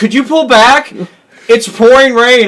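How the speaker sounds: very loud, shrill, high yell carrying over distance. Retelling how she called out the door in the rain: imitating someone yelling. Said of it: "she's yelling out the door".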